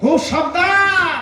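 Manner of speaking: emphatic shout, slow, loud, high and drawn out.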